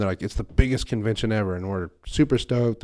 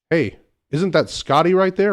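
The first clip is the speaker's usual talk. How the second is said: really loud, high, carrying call-out; 8 semitones higher, 4 dB louder than usual. Retelling spotting a Star Trek actor, the speaker quotes his mom, retelling a really loud call. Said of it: "Really loud".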